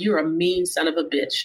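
plain

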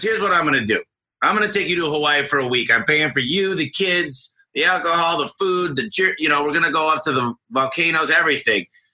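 put-on cheerful, happy little Texan accent. Retelling a speech by Zig Ziglar to the other speaker: Zig Ziglar Texan accent. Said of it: "he had his little Texan accent and he go".

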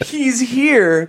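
acted-out, very high scream of alarm. Recounting screaming oneself awake to warn others in the house, retelling a scream. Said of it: "And I screamed".

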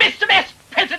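calling out at full shout. Barrington calls out to the Vice President with only the two of them present, shouting. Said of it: "There's no need to shout".

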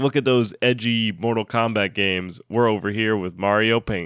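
ordinary talk

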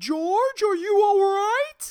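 shrill, very high, very loud shout. Retelling how mom called into the men's room: imitating mom screaming. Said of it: "my mom scream".

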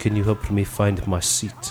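put-on soft Eastern European accent. Retelling a woman who walked up asking for help finding her seat, Eastern European accent. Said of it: "she had that like Eastern European accent".

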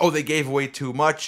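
plain

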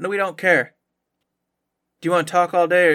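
put-on very flat deadpan tone. Retelling how a listener brushed off a product pitch, retelling a super deadpan reply. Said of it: "It was super deadpan".

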